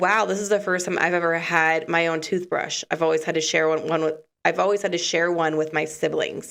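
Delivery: ordinary talk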